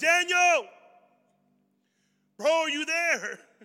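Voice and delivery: booming, very loud, high-pitched yell. Retelling a Bible story, the king yells out to check on his friend. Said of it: "And he yells out".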